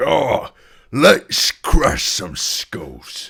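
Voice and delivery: very high, very loud, booming, drawn-out monster bellow. Voicing the Minotaur charging toward the fight: voicing the Minotaur. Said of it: "the Minotaur. It's like".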